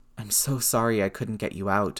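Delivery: whispered, voice thick with emotion. One man, holding another from behind, speaks to him; whispered, voice thick. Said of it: "Steve whispered, voice thick".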